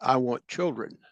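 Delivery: put-on matter-of-fact delivery. Man retells his wife's answer to his joking question, imitating a matter-of-fact tone. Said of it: "she very matter of factly said".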